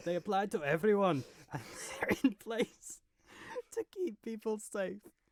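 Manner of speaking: fake Scottish accent, soft and high. Reading out the SNP leader's tweet when asked, in a put-on Scottish accent. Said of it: "Do a Scottish accent".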